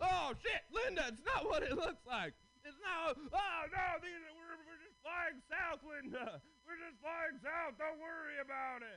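flustered goose voice with fumbling delivery. Performing a bit at their show, the speaker does six geese a-laying. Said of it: "this is my impression of six geese a-laying".

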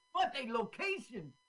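attempted Swedish accent. Joking about the filmmakers while watching their movie, attempted Swedish accent. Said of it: "I'm trying to do their Swedish accents".

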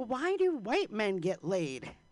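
put-on furious man, angry, slow, lashing out. Retelling a man shouting at a friend: imitating an angry man. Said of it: "he was so mad at my friend".

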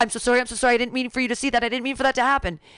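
gushing apologetic tone. Retelling what a man caught peeing at the door said: imitating an apologetic man. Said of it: "he was so apologetic".

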